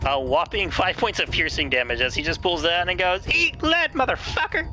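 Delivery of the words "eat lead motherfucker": very high-pitched put-on voice, slower. Narrating a game character firing a shot, in a really high-pitched voice. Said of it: "like a really high-pitched voice that I do not have".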